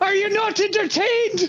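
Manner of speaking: yelling out. Playing a fighter in an arena, yelling to the fans. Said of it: "I yell to the fans".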